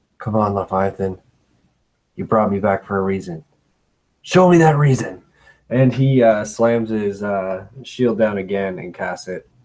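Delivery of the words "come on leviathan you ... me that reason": whispering in a low tone. Playing their character, speaker whispers to Leviathan in old Avos: low whisper. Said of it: "I just whisper in uh in a low tone".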